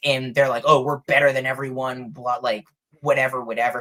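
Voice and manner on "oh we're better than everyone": mocking, arrogant, snooty tone. Describing three infuriatingly arrogant humans, the speaker mocks their arrogant tone. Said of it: "They're infuriatingly arrogant".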